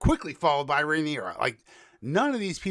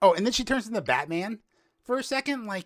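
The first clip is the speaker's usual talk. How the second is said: ordinary talk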